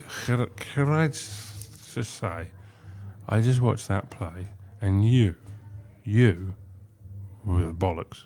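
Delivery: put-on very drunk man voice. Retelling what a very drunk man said after a play: imitating a very drunk man. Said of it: "very drunk, and he went".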